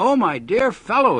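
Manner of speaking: gasped out. A very excited friend comes into the narrator's laboratory, gasping. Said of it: "he gasped".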